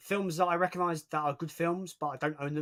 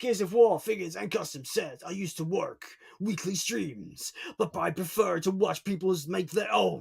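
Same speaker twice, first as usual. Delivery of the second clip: dramatic movie trailer announcer narration voice; 3 semitones higher than usual. A streamer reads a viewer's comment aloud, in a movie trailer announcer voice. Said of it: "I went Trailer Man voice".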